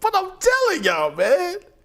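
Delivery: high, wide-ranging, hyped storyteller voice.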